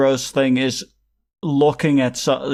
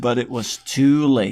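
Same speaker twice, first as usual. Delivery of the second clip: normal talking voice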